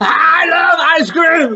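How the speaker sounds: angry, loud declaration. Teaching how to say one sentence with different feelings: angry.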